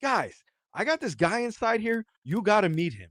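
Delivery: put-on very high, swooping voice bursting with excitement. Telling how Sean met them outside the jail, imitating Sean's excited voice. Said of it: "he's so excited".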